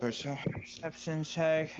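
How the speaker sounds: slow, flat, unexcited delivery.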